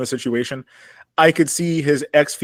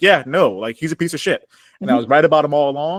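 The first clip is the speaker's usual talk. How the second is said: usual speaking voice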